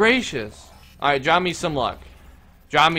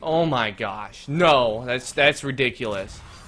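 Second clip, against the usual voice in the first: ordinary talk, nothing marked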